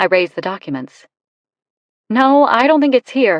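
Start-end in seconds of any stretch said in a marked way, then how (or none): 2.1-3.4 loud, raised, pitched-up performed delivery. A character lies aloud for possible eavesdroppers, in a loud voice. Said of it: "I lie in a loud voice".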